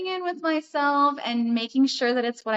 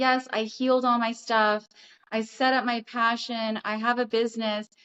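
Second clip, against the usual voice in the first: plain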